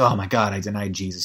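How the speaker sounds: acted tearful crying voice. Retelling the Bible story, speaker acts out the man who denied Jesus, mock-crying. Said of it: "He's crying".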